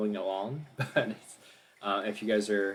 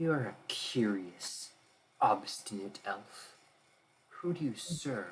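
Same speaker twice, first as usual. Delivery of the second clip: unseen-sounding, mysterious, echoing female voice; 4 dB quieter than usual. Narrator voicing a mysterious voice questioning the elf, in a mysterious female voice. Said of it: "the female voice saying".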